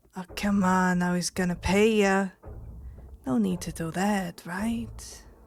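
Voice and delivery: mocking, taunting villain voice. Voicing Tyax after a spell fades: mocking villain Tyax. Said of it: "Tyax just cocks his head and goes".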